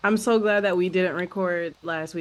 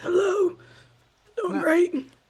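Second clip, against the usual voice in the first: mimicking a voice that sounds like trash, higher; 11 semitones higher than usual. Retelling answering parents' calls after losing the voice: imitating own lost voice. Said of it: "Voice sounded like trash".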